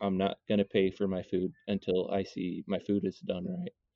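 hushed, muttered half to herself, under the breath. Retelling a customer's remark at the front register: imitating someone muttering under breath. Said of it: "under her breath say".

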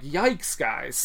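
ordinary talk

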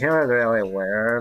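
stock character voice, marble-mouthed and mumbled. Showing the stock ex-girlfriend voice again: marble mouth style. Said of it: "that's my stock ex-girlfriend voice".

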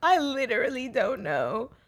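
high-pitched, put-on tearful sobbing voice. Recalling lying in bed crying with Mum there, imitating past self crying. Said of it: "when I was just like laying there crying, going".

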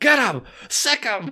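put-on high, shouted yelling. Retelling a wrestling scene, a man yelling at dogs: imitating someone yelling. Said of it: "he starts yelling at the dogs".

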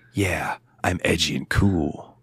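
slow, dragged-out, too-cool princely drawl. Mocking the young prince character Noctis: imitating young prince Noctis. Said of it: "young prince guy".

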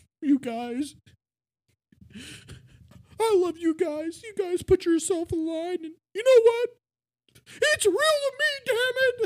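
very high, loud, emotional, tearing-up, tearful gushing. Retelling a man at a convention asking the guys a question, imitating someone tearing up. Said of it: "That was a really good impression".

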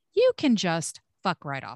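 ordinary talk

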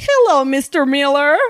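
bizarre, high-pitched fake Minnesota accent. Retelling what Ivy said to Mr. Miller: Ivy's fake Minnesota accent. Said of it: "With this bizarre accent".

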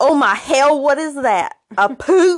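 slow, high, horrified put-on Southern drawl. Reading out a dad's horrified line from a story: put-on southern accent. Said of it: "I'm imagining he has this, like, a southern accent".

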